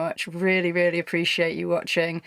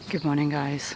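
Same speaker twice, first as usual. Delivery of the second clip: hushed whisper, slower; 3 semitones lower, 4 dB quieter than usual. Greeting viewers early in the morning, in a whisper. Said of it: "I'm whispering because it's quite early".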